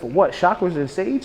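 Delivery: plain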